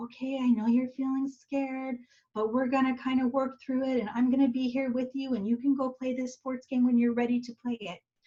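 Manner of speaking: calm, quiet, steady, soothing, gentle voice. Showing how a parent might reassure a scared child, in a calm, quiet voice. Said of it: "you might have a calm voice, a quiet voice, and say".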